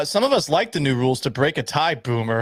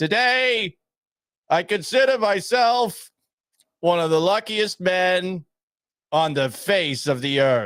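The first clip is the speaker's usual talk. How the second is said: slow, drawn-out, echoing stadium announcer voice; 4 semitones higher than usual. Host on air, after listeners texted about his echo: Lou Gehrig echoing speech. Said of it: "I sound like a stadium announcer".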